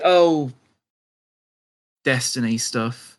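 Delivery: breathed out on a deep, heavy sigh. Speaker shows how they would deliver the line, with a deep sigh. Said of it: "take a deep breath and then give a deep sigh and say".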